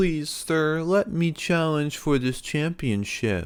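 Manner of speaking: high, mocking, taunting, sarcastic voice. Retelling what a wrestler says after ripping off his opponent's mask, imitating a mocking voice. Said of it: "in like a mocking voice".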